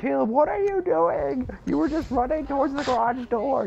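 mock, very high, frantic-sounding screaming. Retelling how the listener screamed at him, imitating someone screaming. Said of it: "you started screaming at me like".

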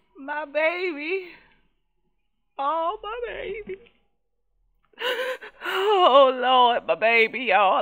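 high, emotional, choked-up voice near tears. Speaking to viewers after a toddler blows out candles: emotional, near tears. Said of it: "I ain't crying".

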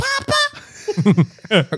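very high yell, pitch swinging up and down. Retelling how the girl calls out: imitating Eleven yelling Papa. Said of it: "She's like".

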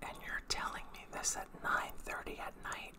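sharp, quiet, near-whisper. Narrator reading her reply when he says he's going out, asking sharply, quietly. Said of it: "her eyes dull and calculating. ... Quietly, but loud enough for me to hear".

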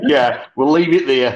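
ordinary talk

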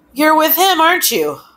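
pointed, accusatory delivery. Narrator reads Mars's line to Pluto, accusing. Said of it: "Mars accused".

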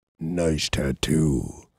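very low, super deep bass voice. Retelling a remark heard while walking, in a super deep male voice. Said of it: "that's my impression of a super deep-voiced guy".

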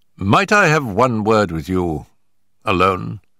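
ordinary delivery

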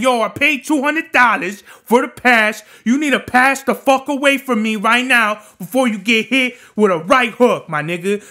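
put-on mad shouting. Acting out getting mad at someone cutting the line, mock-angry yelling. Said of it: "I'ma fucking get mad and be like".

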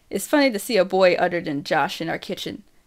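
plain reading voice

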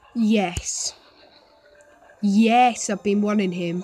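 sarcastic. Streamer reacting to pulling another unwanted game character, sarcastic. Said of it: "that was sarcastic".

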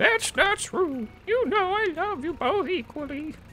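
put-on very high elderly woman voice. Replying to a child who feels left out, in an old lady voice. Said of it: "I'm giving you an old lady voice".

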